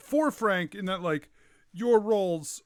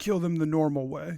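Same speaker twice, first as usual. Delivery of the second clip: lower, faster whisper; 4 semitones lower than usual. A game master voicing a man leaning to his guards, whispering to his guards. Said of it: "he leans to his guards and he just whispers".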